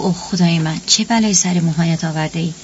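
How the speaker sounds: plain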